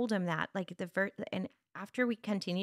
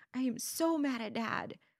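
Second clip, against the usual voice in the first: put-on high, drawn-out, weepy, upset tearful child voice; 5 semitones higher than usual. Retelling her son coming to her upset about his dad, imitating him in tears. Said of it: "And he would come in tears".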